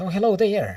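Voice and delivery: high-pitched woman's voice. Playing a lady alone answering the other player, in a high-pitched voice. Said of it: "says in a pitched, high-pitched voice".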